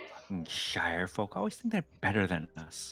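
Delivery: soft grumble, muttered under the breath. Voicing a character pulling away from the group: muttering under her breath. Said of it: "muttering under her breath".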